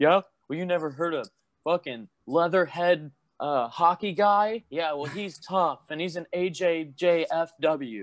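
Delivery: smug snobby voice. A speaker mimics wrestling elitist fans, mocking snobby wrestling elitists. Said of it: "I'm sure there's wrestling elitists. They're like".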